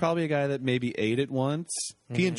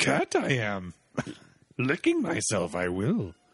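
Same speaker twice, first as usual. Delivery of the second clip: put-on swooping, sing-song wise old alien voice, wandering pitch; 4 semitones lower than usual. Voicing a cat that sits like Yoda, in a Yoda voice. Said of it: "sits like Yoda sometimes".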